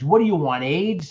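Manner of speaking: acted, mock-angry voice. Retelling what the cop said to him, imitating the cop getting mad. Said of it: "then he got mad".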